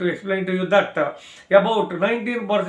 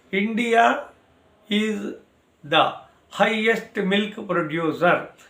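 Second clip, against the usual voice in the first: very slow, deliberate, halting word-by-word delivery. Dictating an exam point for students to write down, very slow reading. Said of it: "I read very slowly".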